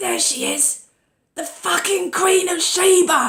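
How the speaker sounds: put-on loud, high shout in a Cockney accent. Retelling how June poked her head round the curtain, imitating June's Cockney accent. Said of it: "in this uh, amazing Cockney accent".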